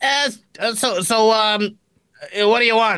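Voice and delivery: hesitant, high, stammering ventriloquist dummy voice. Voicing a ventriloquist dummy greeting approaching players: ventriloquist dummy voice. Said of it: "The ventriloquist dummy looks at you and says".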